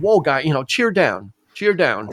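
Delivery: plain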